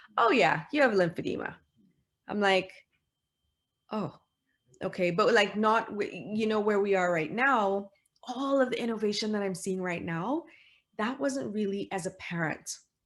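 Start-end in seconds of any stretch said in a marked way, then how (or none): 0.2-1.6 mock tossed-off, matter-of-fact, quick, raised, offhanded. Retelling what a vascular surgeon said at the visit: imitating an offhanded tone. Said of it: "in a very offhanded manner went".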